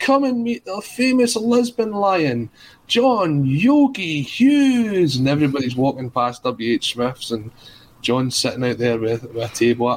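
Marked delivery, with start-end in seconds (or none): 0.0-5.2 mock full-voice holler, very high and drawn-out. Retelling the book-signing man calling passersby to meet the author, retelling a shout. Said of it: "kept shouting at the top of his voice".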